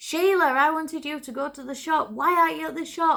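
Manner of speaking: put-on, high, scolding shout. Retelling how she shouted down the stairs at the children: retelling a shout down stairs. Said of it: "she used to shout down the stairs".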